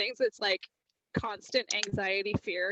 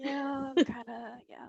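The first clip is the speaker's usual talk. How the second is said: acted-out slow, slurred, worn-out, tired speech; 3 semitones higher, 3 dB quieter than usual. Imitating yourself late at the convention, worn out: imitating tired slurred speech. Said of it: "slurring your words like you've been drinking steadily".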